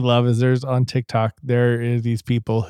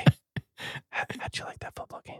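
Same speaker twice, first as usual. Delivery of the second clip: fast, unvoiced ASMR whisper. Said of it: "A S M R".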